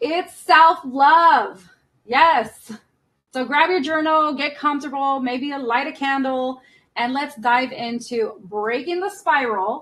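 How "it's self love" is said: projected to back row, "love" drawn out. Repeating a phrase for the people in the back, saying it louder. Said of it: "Let me say it louder for the people in the back".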